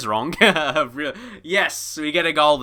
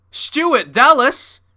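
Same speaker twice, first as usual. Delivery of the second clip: quick put-on American accent, pitched higher; 9 semitones higher, 6 dB louder than usual. Blurting out a name, mock American accent. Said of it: "try and do an American accent".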